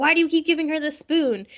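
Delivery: high, loud exasperated yelling.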